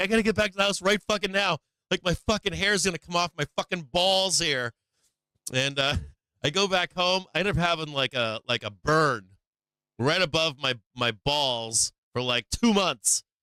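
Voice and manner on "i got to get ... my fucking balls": high-pitched, rushed, frantic panicked yelling. Retelling yelling at his brother outside in a parking lot: retelling yelling at someone. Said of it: "I'm like yelling at him".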